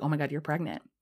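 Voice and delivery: ordinary talk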